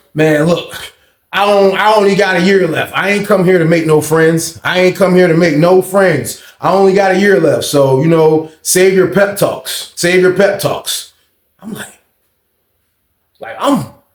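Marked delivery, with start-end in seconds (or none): none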